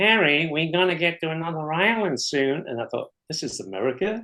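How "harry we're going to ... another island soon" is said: put-on nasal Bronx accent, pitched much higher. Recalling his first voice heard off a ship, the speaker imitates a lady from the Bronx in a nasal voice. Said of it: "this nasal voice saying".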